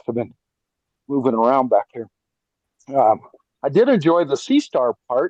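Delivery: out of breath, halting, phrases broken up. Listener talking to the hosts after moving around: out of breath. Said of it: "sorry I'm out of breath".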